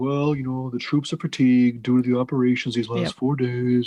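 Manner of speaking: put-on gloomy, complaining voice. Retelling an officer's objection to attacking: imitating a Debbie Downer voice. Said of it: "probably in his Debbie Downer voice".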